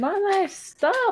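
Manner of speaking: very high, shrill, screeching put-on yell. Acting out a character's turn in the game: yelling in character. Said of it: "I just keep yelling".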